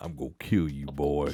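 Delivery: low, put-on menacing growl. Repeating a threatening dream voice from the story: put-on menacing voice. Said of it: "it's menacing".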